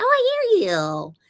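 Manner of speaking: very high, drawn-out, slow put-on dog voice. Talking to the dog on camera, then speaking for her: voicing the dog. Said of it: "I gotta do that with the voice".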